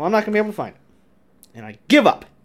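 fed-up, cranky, irritable, annoyed resignation. Giving up on finding something after calling themselves irritable: irritable. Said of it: "My T-levels must be high. There you go. Irritable".

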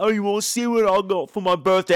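put-on Cockney accent in a kid voice. Quoting a kid from a film, in a cockney accent. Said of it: "I know I'm doing Cockney right now".

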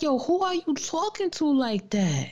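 swooping, animated, demanding mom voice. Retelling their mom banging on the door: imitating their mom. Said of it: "my mom would just be banging on the door like".

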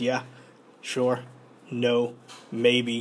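slow, dead-level deadpan monotone, no inflection. Describing how Goblin Slayer answers in one-word answers, in his monotone. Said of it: "he's very monotone".

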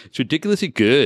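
put-on high-pitched young-dude bro voice. Reading a young interviewee's quote about a drink: Zoolander voice. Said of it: "You sound like Zoolander".

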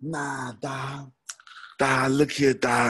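middle-aged voice with dah fillers throughout. Speaker tells listeners how his cousin talks, imitating his cousin's voice. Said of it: "He talked like this here".

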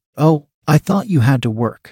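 ordinary delivery, nothing marked

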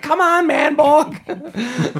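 shrill, very high, loud screaming. Retelling how Justice screams at Manborg: imitating Justice screaming. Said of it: "Justice is screaming at him the whole time".

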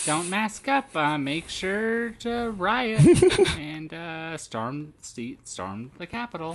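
mocking, mousy preschool-teacher voice. Mocking what Casey says, the speaker imitates Casey's mousy voice. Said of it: "Casey's voice is very mousy sounding".

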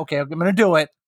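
normal talking voice

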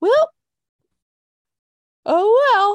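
very high, squeaky, loud put-on voice. Imitating someone not caring that wrestlers may leave: Tony Khan impression. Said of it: "That's my impression".

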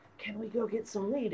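very quiet, hushed half-whisper. Retelling a thrift-shop outing, the speaker quotes what a woman half-whispered: retelling a half-whisper. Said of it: "she's whispering to me later on".

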